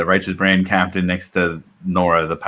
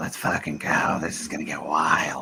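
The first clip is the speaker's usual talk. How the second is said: soft mumbling, muttered under the breath; 3 semitones lower, 9 dB quieter than usual. Mushroom goblin taking a handful of mushrooms, muttering under his breath. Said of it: "mutter under his breath".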